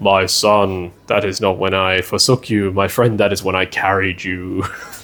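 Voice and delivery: deep, dropped voice. Speaker retells the footprints story, God answering the one who asks, in a deep God voice. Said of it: "in his deep God voice".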